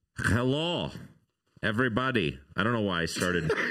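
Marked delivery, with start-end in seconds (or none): 0.2-2.4 horrible put-on Russian accent. Greeting everybody at the start, in a horrible put-on Russian accent. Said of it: "With my horrible Russian accent".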